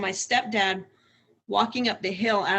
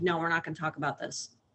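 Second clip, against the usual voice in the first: mock no-nonsense, stern, firm tone; 3 semitones lower, 5 dB quieter than usual. Retelling how he refused to discuss what happened: imitating a stern refusal. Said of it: "he was stern with us".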